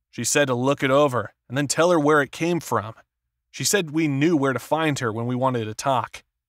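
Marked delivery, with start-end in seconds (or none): none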